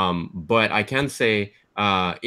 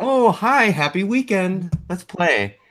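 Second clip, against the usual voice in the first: very high, slow android voice; 10 semitones higher than usual. Describing the game's title screen, imitating the android host. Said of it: "She's like".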